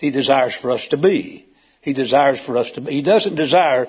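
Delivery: ordinary delivery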